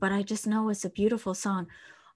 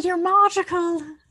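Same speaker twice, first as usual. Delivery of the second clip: bad fake Irish accent, much higher, louder; 9 semitones higher, 8 dB louder than usual. Repeating what they just said to the others, in a bad Irish accent. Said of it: "It's an Irish accent".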